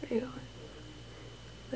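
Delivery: soft unvoiced whisper. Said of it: "Talking quiet because".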